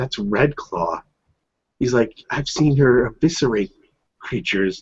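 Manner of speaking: put-on whispering voice. Describing a scene where he gets close to her, retelling a whisper. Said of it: "he kind of whispers like".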